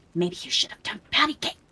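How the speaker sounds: urgent yelled whisper. Asked how loud they are shouting, whisper-yelling. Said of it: "I'm just whisper yelling".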